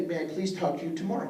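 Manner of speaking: usual speaking voice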